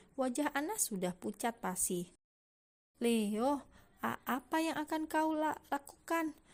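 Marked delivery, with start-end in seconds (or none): 3.1-6.4 high, halting, stumbling stammer. Reading a story, a frightened woman asks a question: stammering. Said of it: "tanya Anna dengan terbata".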